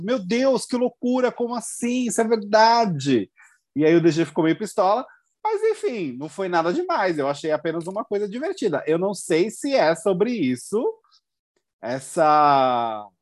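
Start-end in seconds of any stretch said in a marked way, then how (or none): 0.0-3.3 acted, high, over-the-top astonished amazement. Retelling how someone reacted to a comment: imitating an exaggeratedly amazed reaction. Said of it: "se expressou de uma forma muito".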